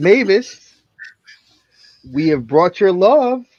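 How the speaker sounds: loud, clear, carrying delivery. Player stating their reaction in the game, in a loud, clear voice. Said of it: "And I say in a loud, clear voice".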